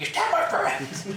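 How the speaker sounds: high, mild ape-like baboon yell. Describing a man yelling at you, retelling a baboon-like yell. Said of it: "he's just yelling at you, almost like baboon".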